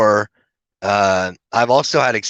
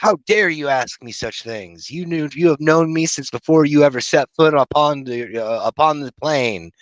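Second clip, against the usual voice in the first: high-pitched, mad, angry scolding tone; 5 semitones higher than usual. Retelling what a hooded figure said during a trip: imitating an angry voice. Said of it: "it got real mad".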